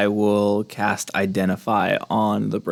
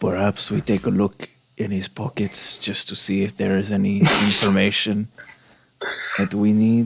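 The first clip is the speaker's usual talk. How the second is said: sly, sidelong remark. Role-play character sidling up to a companion beside a body, under the breath. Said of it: "just sort of under my breath".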